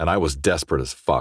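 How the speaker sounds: ordinary delivery, nothing marked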